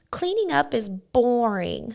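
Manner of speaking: put-on very slow, drawn-out, sweet small child's voice. Retelling what a child said about cleaning up: imitating Aiden's sweet little voice. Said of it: "But his little voice".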